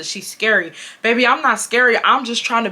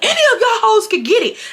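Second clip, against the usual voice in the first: put-on very high, shrill screaming; 13 semitones higher, 3 dB louder than usual. Retelling a fight with teammates: imitating own screaming. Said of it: "So I'm screaming".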